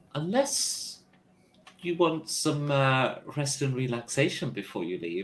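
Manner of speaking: charming, inviting, smiling voice. Voicing a character who smiles at a player: charming smiling voice. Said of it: "he gives you kind of a charming smile".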